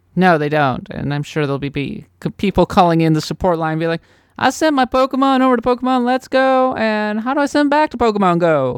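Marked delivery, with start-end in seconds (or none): 4.4-8.8 put-on high voice in a vaguely Southern accent. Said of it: "I'm sorry for the vaguely Southern accent".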